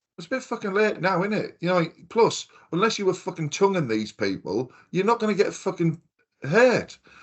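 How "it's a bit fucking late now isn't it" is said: talking through laughter. Retelling own reaction to outbreak news: retelling own remark while laughing. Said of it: "And I'm laughing, going".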